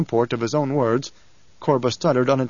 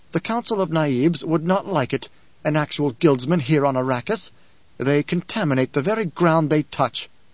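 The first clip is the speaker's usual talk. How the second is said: usual speaking voice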